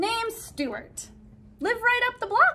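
bright, very high, chirpy delivery. A visitor going from room to room speaks to the narrator, chirping. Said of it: "he chirped".

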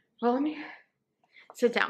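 out of breath, winded. Speaker with coffee, trying to wake up, goes to sit, out of breath. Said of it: "I'm out of breath".

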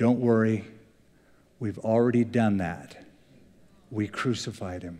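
calm, low, soft, even-keeled voice. Telling a story, quoting a stranger at the back of an elevator: imitating a calm voice. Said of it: "a calm voice said".

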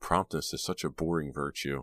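plain reading voice

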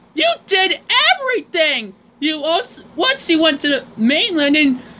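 high-pitched, exasperated complaining tone. Thomas talking to James in a dub; upset, exasperated Thomas voice.

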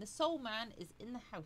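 plain

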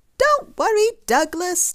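very high, bright, chirpy little bird voice. A swoopy bird speaks to Douglas, chirping. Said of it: "chirped a swoopy bird".

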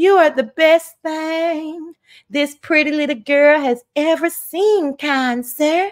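put-on Southern accent let out. Playing a pretty little girl addressing a kind sir; Southern voice. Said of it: "get out my real Southern voice".

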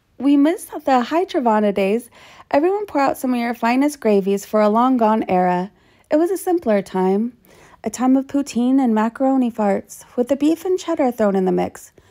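ordinary delivery

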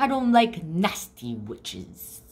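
ordinary talk

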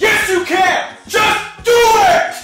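shouting, hollering. Pushing someone who says they're scared and can't, shouting. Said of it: "stop shouting".

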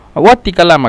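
plain

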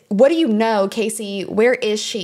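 ordinary talk

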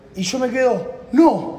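high-pitched, loud, shouted single word "no". Retelling watching a key slowly fall, retelling a shout. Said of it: "Grité".

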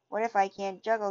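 plain

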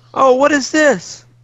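high, shocked outburst dripping with sarcasm. A woman points her sword at someone and exclaims, exclaiming. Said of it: "She exclaims".

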